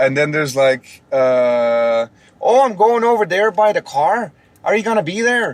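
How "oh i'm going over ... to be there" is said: high, put-on Minnesota accent. Speaker demonstrating regional accents to a co-host, doing a put-on Minnesota accent. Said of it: "that's more like Minnesota".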